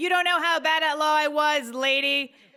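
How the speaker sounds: play-acted, fired back quickly with pitch lifted. Jess retells answering a heckler from the crowd, retelling a yell back. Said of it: "but I yelled back".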